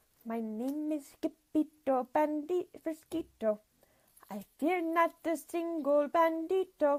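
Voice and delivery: hushed, very soft, slow, unhurried voice. Narrator reads a bandit introducing himself, in a very, very soft voice. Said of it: "in a muy, muy soft voice".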